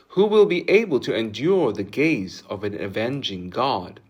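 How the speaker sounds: ordinary delivery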